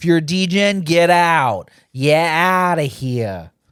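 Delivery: fake Boston accent, drawn-out "yeah". Joking with the other speaker about the audience, in a put-on boston accent. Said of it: "What accent was that?".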